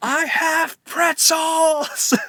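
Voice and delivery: play-acted very high, shrill, top-of-lungs scream. Retelling a man screaming at people to come buy pretzels, imitating someone screaming. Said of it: "at the top of his lungs".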